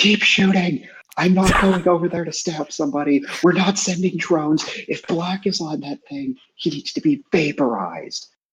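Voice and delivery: full-on, shrill scream, pitched very high. Playing a character in a fight, urging others to keep firing: screaming in character. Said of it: "I'm just sitting there screaming".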